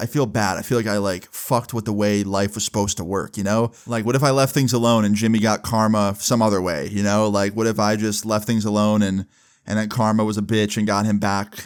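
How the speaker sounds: usual speaking voice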